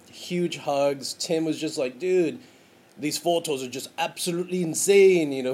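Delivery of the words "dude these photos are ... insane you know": loud, slight Irish brogue drifting toward British. Recounting Tim's reaction to the photos shown to the bride, Irish brogue. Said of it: "with his little Irish brogue".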